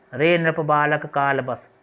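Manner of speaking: ordinary talk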